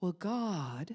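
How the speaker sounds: mock breathy preacher-like tone. Recalling a class, speaker imitates the religious voice taught there: mock breathy religious voice. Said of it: "You can get real breathy at this class".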